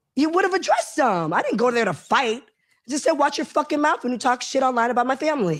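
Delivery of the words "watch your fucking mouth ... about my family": put-on sassy, cutting tone. Retelling what was said at the restaurant: imitating own sassy retort. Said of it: "I was a little sassy".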